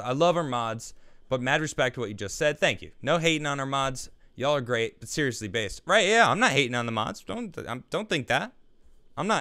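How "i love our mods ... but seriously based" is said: normal talking voice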